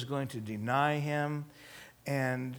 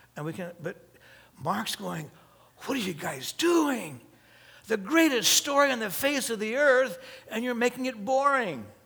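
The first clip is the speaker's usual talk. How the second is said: normal talking voice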